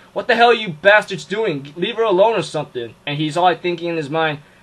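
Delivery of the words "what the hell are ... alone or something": acted, furious, heated, very angry outburst. Retelling an episode's fight scene, imitating Shiro being angry. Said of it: "Shiro ends up being hella angry".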